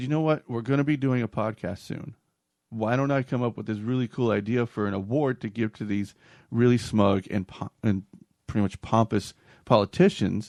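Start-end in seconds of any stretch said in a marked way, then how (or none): none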